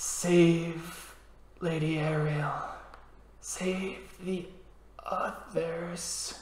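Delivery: faint, soft dying whisper, very slow. Voicing a dying red cap who whispers to a player: dying red cap whispering. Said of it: "it starts whispering something to you".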